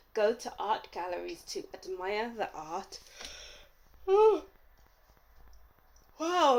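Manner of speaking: speaking through a yawn. Reading messages aloud to group two; yawning while speaking. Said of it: "I'm yawning".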